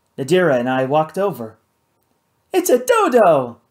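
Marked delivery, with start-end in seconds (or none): 2.5-3.5 eager, high, loud exclamation, last word drawn out. A woman whirling from one thing to the next spots something, exclaiming. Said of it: "Kate exclaimed".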